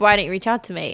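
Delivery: ordinary talk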